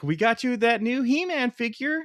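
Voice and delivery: put-on, worked-up excitement. Acting out an imagined toy commercial line: acting all excited. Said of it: "all excited".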